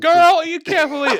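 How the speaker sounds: mock screaming out loud. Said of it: "screaming out loud".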